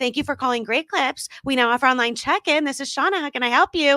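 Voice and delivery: put-on customer-service phone voice. Recalling answering calls at her old Great Clips job, in her work voice. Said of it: "me going from my work voice".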